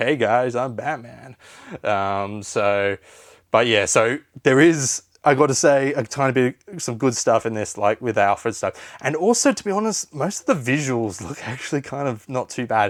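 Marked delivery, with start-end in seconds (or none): 0.0-1.4 breezy, totally unserious, carefree hero voice. Mocking an over-the-top movie Batman in the suit: unserious George Clooney as Batman. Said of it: "he's just so ridiculously, like, just not serious at all".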